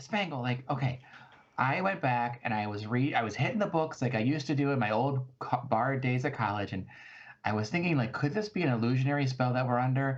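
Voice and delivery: ordinary talk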